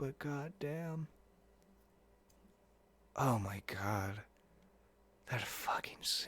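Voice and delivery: hoarse, very quiet, worn-out rasp, voice gone. Reacting to a scene just watched, the speaker talks with voice completely gone. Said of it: "my voice is completely out".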